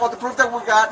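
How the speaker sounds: ordinary talk, nothing marked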